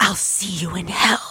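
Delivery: voiced stage whisper. A woman about to hit the cobblestones with her foe, whispering. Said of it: "she whispers".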